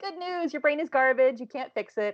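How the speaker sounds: really cheerful, chipper, bright, high-pitched happy voice. Showing how they'd come on the stream to viewers, in a really happy voice. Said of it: "like a really happy voice".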